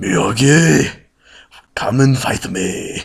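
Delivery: loud, slow puppet-style monster voice. Reviewing a movie, mimicking the man who feuds with Miyagi in a Cookie Monster voice. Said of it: "close your eyes and you'll hear the Cookie Monster".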